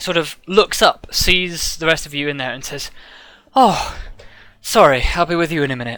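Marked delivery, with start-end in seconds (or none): 3.5-6.0 out of breath, catching his breath. A man arrives after jogging and apologizes to the waiting group, out of breath. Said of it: "Just give me a second to catch my breath".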